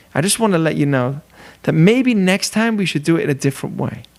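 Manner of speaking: calm, gentle, tactful tone with no edge. Showing how somebody speaks so the listener won't get defensive, in a soft tone. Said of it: "somebody who speaks in a soft tone".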